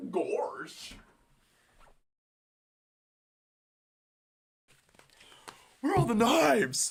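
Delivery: high, swooping, cartoonish dog voice going way up. Quoting a parody video, the speaker does the line in a Goofy voice. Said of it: "Goofy voice".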